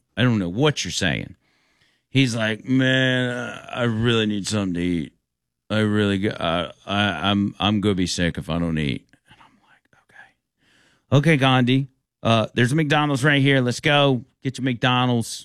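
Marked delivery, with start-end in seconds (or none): 2.7-9.1 mock slurring, slower and lower. Speaker quotes a hungry man he couldn't understand, imitating slurred Indian-accented speech. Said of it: "his words are so slurred".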